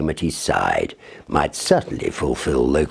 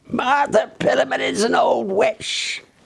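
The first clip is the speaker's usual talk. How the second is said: put-on very high, shrill, cracked old woman's cry. Narrator voicing a woman shouting as she hobbles away through the farmyard, shrill cracked voice. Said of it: "she shrilled out in her cracked voice".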